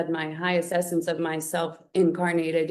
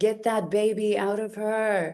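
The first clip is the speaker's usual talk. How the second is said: restrained yet frantic, urgent, drawn-out scream-like cry; 4 semitones higher than usual. Recounting a medical emergency, retelling someone screaming. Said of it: "I hear her screaming".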